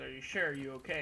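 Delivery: plain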